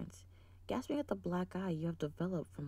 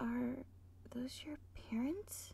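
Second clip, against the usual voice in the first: hushed, quiet voice with raised pitch; 6 semitones higher, 4 dB quieter than usual. A narrator reads a character's question to someone leaning down to her, hushed tone. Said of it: "She asks in a hushed tone".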